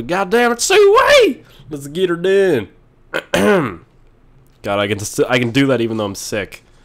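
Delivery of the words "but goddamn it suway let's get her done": odd put-on voice, high and hollering. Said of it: "I don't know why I'm talking like this".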